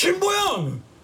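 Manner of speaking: piercing, very high yell. Cutting into a heated argument by calling out someone's name, yelling. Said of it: "보현이한테 소리 지르지 마!".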